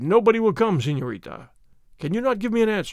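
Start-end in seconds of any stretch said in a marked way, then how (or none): none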